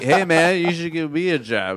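put-on loud drunk talk. Retelling own past words after grabbing someone: imitating own drunken speech. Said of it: "I drunkenly, I'm like".

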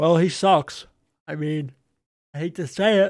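talking through a yawn. Football fan discussing a team's midfielders: talking through a yawn. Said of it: "Sorry, I'm yawning".

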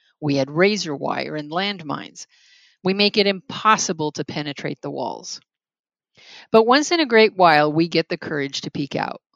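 ordinary delivery

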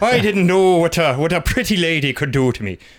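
rich Irish brogue impression. Retelling how a film's narrator talks, doing a rich Irish brogue impression. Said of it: "attempts a rich Irish brogue".

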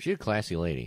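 dry, sarcasm-laden aside. Commenting on a woman in a bar story: sarcastic tone. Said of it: "the sarcasm in my voice there".

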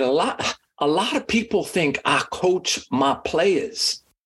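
put-on southern drawl. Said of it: "he's got this, like, Southern drawl".

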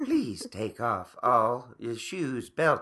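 soft, soothing, calm robot announcer voice. Voicing a machine that gives instructions in line, soft soothing robotic voice. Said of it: "have a robotic, like, soft ... soothing voice".

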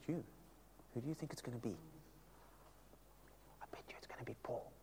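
soft, hushed, fast gossiping whisper.

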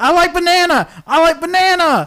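put-on wacky character voice, loud, high, totally freaking out. Retelling a movie scene where a character freaks out: imitating a character freaking out. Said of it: "And he starts freaking out".

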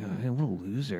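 mocking mutter under breath. Retelling how people reacted to him, imitating muttering under breath. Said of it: "They're muttering under their breath like".

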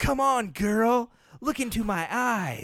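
put-on breathy teenage voice. Acting a scene opposite a partner as a teen: breathy teen voice. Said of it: "I'm a breathy teen".

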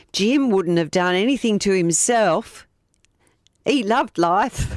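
fake, put-on Australian accent. Reading out a quoted statement, trying to get more Australian in: put-on Australian accent. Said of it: "try and get a bit more Australian into it".

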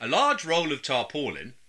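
put-on evening news announcer delivery. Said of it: "It sounded just like a news announcement".

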